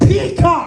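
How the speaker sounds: exasperated, high, angry yell. Retelling how she yelled a command into the tv remote, imitating her yelling. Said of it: "yelling into the remote".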